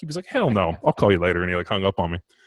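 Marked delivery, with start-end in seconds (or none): 0.3-1.4 put-on loud, deep old man's Southern accent. Retelling what an old man said about a fire truck: imitating a deep Southern accent. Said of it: "a deep Southern accent".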